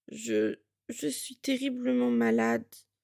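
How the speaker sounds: thick, mumbling voice. Narrator reading a character too ill to stand, mumbling in a thick voice. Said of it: "marmonna-t-elle, la voix pâteuse".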